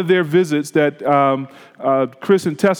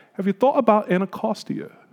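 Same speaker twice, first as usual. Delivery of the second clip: put-on slight British accent; 4 semitones higher, 4 dB quieter than usual. Retelling what Chris asked one morning in the breakfast nook: Chris's little British accent. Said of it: "said in that little British accent".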